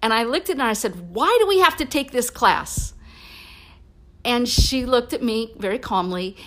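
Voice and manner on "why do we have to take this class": angry, pissed-off tone, pitched higher. Retelling her own question to her, imitating own pissed-off question. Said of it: "And so I was pissed".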